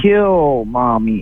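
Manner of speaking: put-on wicked little doll voice. Retelling what an old talking doll said when its string was pulled, evil doll voice. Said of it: "in an evil, little, wicked voice".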